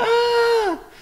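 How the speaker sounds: tiny, squealing, very high scream, drawn out. Speaker describing how Steven screams, doing his little high-pitched scream. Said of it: "his little high pitched scream".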